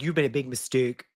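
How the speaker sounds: put-on Canadian accent. Retelling a movie fight scene, quoting Jimmy: Jimmy's Canadian accent. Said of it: "Jimmy has many Canadian accent moments".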